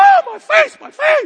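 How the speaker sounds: shrill, high, loud, long drawn-out screaming cry. Retelling how a woman screamed out while everyone watched, retelling a woman screaming out. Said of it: "she's screaming out".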